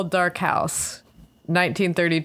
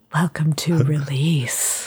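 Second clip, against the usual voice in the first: put-on eerie, spooky, creepy voice. Opening the show with a welcome to the other speaker, in a spooky voice. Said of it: "Was that spooky?".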